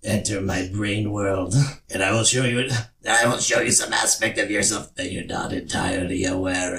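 put-on cartoon character voice. Doing a best impression of the week's episode character. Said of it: "What's your impression for this week?".

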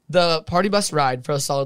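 ordinary delivery

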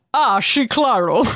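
the s of "sí" lisped. Suggesting how to do a lisped Spanish phrase, say it in a Sean Connery voice. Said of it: "Do it in a Sean Connery voice".

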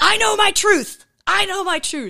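high, loud, insistent belted-out voice.

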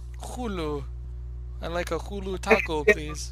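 loud, slight Mexican Spanish twang. Teasing the other speaker's pronunciation of hulu, the speaker mimics it with a mexican twang. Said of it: "a Mexican twang to it".

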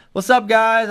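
cheerful, high, bright, upbeat coach voice.

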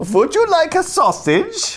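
high-pitched, loud put-on German scientist accent. Impression of a German scientist in a parallel-universe skit: put-on German accent. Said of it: "That's my impression of a German scientist".

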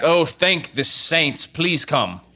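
high, relieved shout. Narrator voicing a man up at the castle answering the commander, shouting back from the castle. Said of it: "you hear the man shout back".

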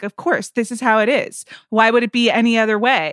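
put-on calm, rational-sounding tone. Retelling how someone laid down rules: imitating Sean Fennessy's calm rational tone. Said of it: "mess with your mind in a rational tone".

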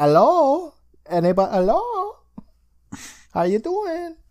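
very high, unhurried, put-on French accent. Retelling a phone answer from an episode: french accent. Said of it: "Your French accent is flawless".

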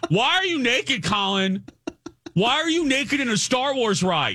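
play-acted, very high, shrill screaming. Telling Grant how you yelled at Colin on the Star Wars ride, retelling own screaming. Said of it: "This is how I'm speaking to him".

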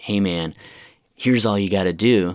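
put-on obnoxious 80s LA guy voice. Speaker retelling a nervous flyer's seatmate giving advice: douchey 80s la guy voice. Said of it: "the douchey sort of LA suit guy".

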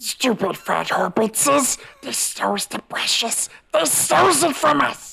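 raspy, very high creature voice, slow. Asked whether you can still do it after practicing all week, do your Gollum impression. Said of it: "Can I hear your Gollum impression?".

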